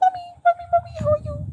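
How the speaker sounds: very high, cute, little bitty English voice. Previewing a character's voice from the next episode, cute little english voice. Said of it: "gonna have a little bitty English voice".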